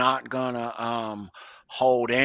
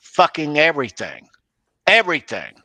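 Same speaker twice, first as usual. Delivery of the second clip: raised, swooping voice hammering each word emphatically; 3 semitones higher, 4 dB louder than usual. Speaker addressing the internet audience about what really happened, in a raised voice. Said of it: "And I'm raising my voice".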